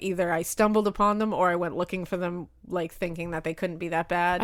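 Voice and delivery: ordinary talk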